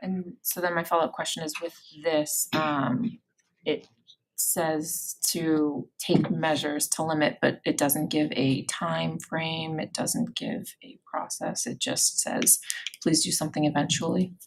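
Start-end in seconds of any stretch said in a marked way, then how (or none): 13.0-14.3 put-on dry, deadpan delivery. Mocking a rule that gives no time frame, dry mock quote.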